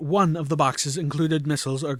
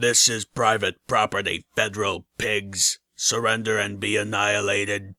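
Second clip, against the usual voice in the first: low, flat, machine-like robotic monotone; 6 semitones lower than usual. During a hallway attack, a robotic voice calls out to the intruders. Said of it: "A robotic voice called out".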